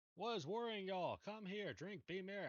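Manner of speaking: barbarian character voice, bravado, pitched high. Voicing a barbarian calling people over to drink: barbarian voice. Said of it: "I'm being barbarian here".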